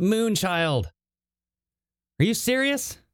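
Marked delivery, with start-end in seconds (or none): 0.0-0.8 loud, hollered, yelled call. Telling how a man shouted out a window, imitating someone yelling. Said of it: "He yells".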